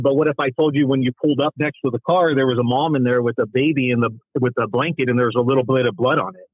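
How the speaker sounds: plain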